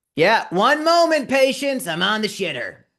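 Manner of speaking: very high, loud, swooping yell. Retelling a woman on the toilet yelling back at the door, retelling a yell. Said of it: "she just yells back at the door".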